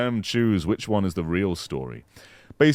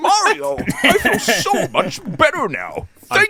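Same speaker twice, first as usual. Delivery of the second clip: put-on old-timey prospector voice, much higher; 6 dB louder than usual. Recapping a Mario game scene, speaking in a Toadsworth voice. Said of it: "He doesn't sound like an old-timey prospector".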